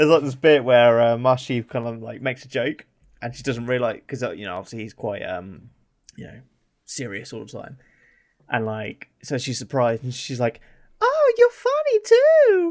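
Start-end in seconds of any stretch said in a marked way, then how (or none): 11.0-12.7 patronising, very high, very slow talking-down voice. Retelling a game scene, imitating Cortana talking to kids. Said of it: "she kinda sounds like she's talking to her kids".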